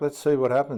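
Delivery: ordinary delivery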